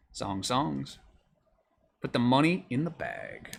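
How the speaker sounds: put-on, swooping cartoon character voice. Calling out cards while opening boxes, doing a character impersonation. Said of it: "That was pretty good impersonation".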